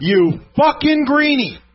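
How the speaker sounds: mock all-out scream, loud and high. Retelling how a man looking at boots screamed out, retelling a scream. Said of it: "I mean screams out".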